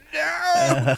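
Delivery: put-on angry shout. Retelling a friend's angry reaction to AI: imitating an angry shout. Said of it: "this big angry face going".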